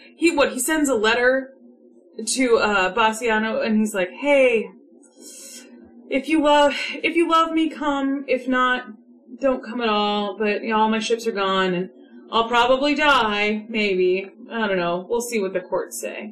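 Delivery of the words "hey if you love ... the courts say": acted casual, shrugging, offhand blasé indifference. Retelling Antonio's letter to Bassiano: blasé Antonio voice. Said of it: "so blasé".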